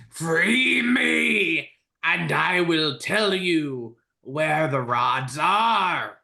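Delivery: very slow shrieking voice, me stretched out. Game master voices a voice heard in the characters' minds, screeching voice. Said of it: "you hear a voice screeching".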